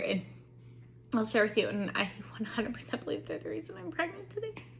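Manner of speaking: tearful, choking up, high and rushed. Telling the story of getting pregnant, starting to cry. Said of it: "I'm starting to cry".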